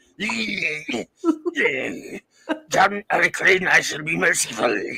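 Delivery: rasped-out, raspy lizard alien voice.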